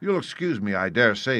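plain

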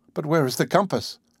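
ordinary delivery

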